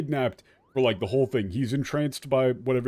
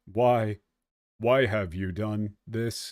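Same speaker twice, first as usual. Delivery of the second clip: slow, flat, eerie, unsettling delivery; 3 semitones lower than usual. Demonstrating a layered, creepy voice idea: flat G-Man-style voice. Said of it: "just flat, but off intonation".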